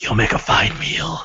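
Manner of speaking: creepy, whispered clawed-creature monster voice. Narrating a game, voicing a clawed creature whispering to Umlal: creature whispering. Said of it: "and it whispers into Umlal's".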